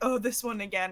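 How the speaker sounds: ordinary talk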